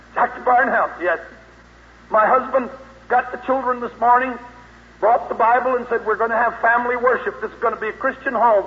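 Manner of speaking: overwrought, frantic, hysterical woman's voice. A preacher retells a morning phone call after his sermon, imitating a hysterical woman caller. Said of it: "a hysterical woman's voice".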